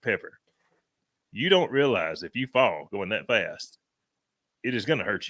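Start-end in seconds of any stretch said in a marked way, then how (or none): none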